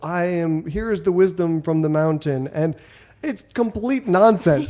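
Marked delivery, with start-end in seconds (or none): none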